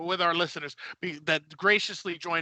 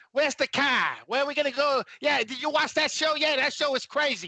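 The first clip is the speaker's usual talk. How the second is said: terrible put-on Boston accent, pitched up; 8 semitones higher than usual. Imitating how the boys on that show talk, in a terrible Boston accent. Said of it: "terrible accent".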